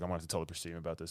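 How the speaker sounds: all-serious, grave, totally straight delivery. Retelling a movie scene where the character stands there: imitating Jason Isaacs, all serious. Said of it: "all serious".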